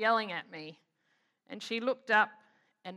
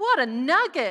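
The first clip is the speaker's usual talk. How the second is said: put-on very loud, shrill, high small-child yell; 5 semitones higher, 9 dB louder than usual. Retelling a little voice yelling from the back of the car in traffic, a loud little-voice yell. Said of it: "this little voice in the back of the car just yell out really loud".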